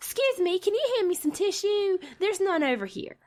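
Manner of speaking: dainty, sweet, high little country-lady voice. Retelling a lady asking the speaker for some tissue, in a sweet little country voice. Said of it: "in the most little sweet little country voice".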